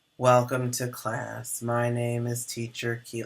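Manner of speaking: soft, dull, flat, lifeless monotone. Demonstrating how not to greet a class, in a flat monotone. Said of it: "you also don't want to be monotone".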